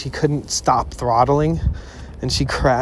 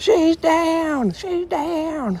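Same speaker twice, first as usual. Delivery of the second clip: heavy, thick, very high southern twang. Retelling what a woman kept saying after a crash, in a thick Southern accent. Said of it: "she has this like thick southern accent".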